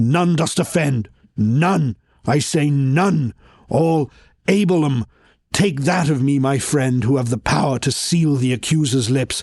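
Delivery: put-on low, old madman's voice, raving and declaiming. Performing a verse drama, the reader voices the madman: low madman's old-man voice. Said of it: "He's the madman. / [name] has flowers strewn in his hair. He's looking wild. He's the madman. / [name] will have an old man voice that's sort of down here, / [name] will have an old man voice that's s".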